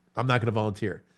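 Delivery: ordinary talk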